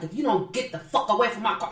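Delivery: play-acted furious outburst, going off in rage. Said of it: "she went off".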